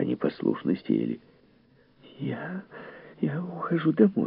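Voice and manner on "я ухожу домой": very high, soft, quavering, trembling voice. After a man shouts at the seated women, one of them speaks in a trembling voice. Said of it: "дрожащим голосом промолвила миссис Бауэлс".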